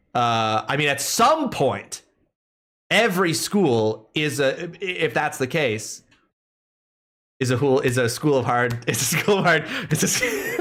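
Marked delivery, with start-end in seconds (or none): 7.3-10.6 fast, giggling mid-sentence, breaking up laughing. Setting up a joke and laughing at it while still speaking. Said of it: "I'm laughing at the stupidity of my own joke".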